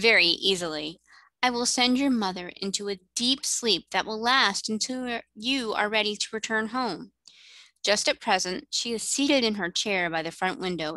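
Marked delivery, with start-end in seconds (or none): none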